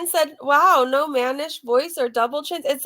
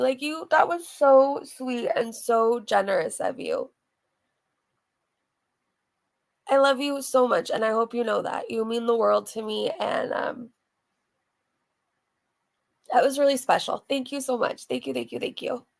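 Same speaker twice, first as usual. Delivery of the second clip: tearful, crying voice, much lower pitch; 5 semitones lower, 5 dB quieter than usual. Speaking directly to the person who moved them to tears: crying while thanking. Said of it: "I'm seriously crying".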